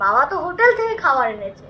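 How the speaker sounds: normal talking voice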